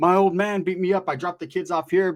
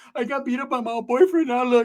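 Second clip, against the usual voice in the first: mock crying woman voice, higher; 7 semitones higher than usual. Retelling what a crying woman said about her boyfriend: imitating a crying woman. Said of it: "She's all crying".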